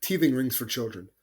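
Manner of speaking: acted offhand, unbothered, breezy, nonchalant delivery. Repeating the other speaker's words back to tease: imitating a nonchalant tone. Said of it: "you said it very nonchalantly".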